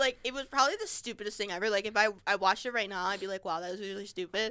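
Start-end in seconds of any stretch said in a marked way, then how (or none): none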